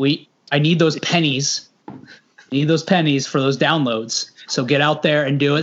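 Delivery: ordinary delivery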